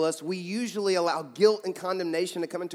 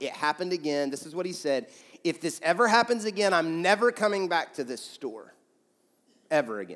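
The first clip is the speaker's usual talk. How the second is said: ordinary talk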